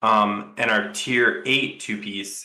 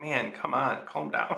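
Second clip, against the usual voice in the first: soft, tired, breathy whispered voice. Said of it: "and you're like".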